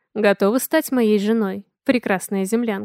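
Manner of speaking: ordinary delivery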